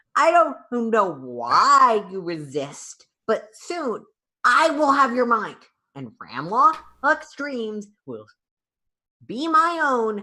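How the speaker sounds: harsh, grating high voice with drawn-out "why". Game master voices a telepathic voice echoing through the players' minds, grating telepathic voice. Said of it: "a grating voice that echoes through your mind".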